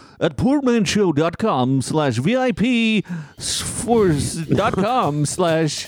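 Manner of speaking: parodied ad-read voice. Mocking own way of reading out the website address: mock nice ad read. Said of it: "'Cause you always say it nicely".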